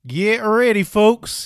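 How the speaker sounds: loud, put-on cowboy accent, pitched way up. Opening the first episode of a show, in a put-on cowboy accent. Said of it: "try out this sweet cowboy accent".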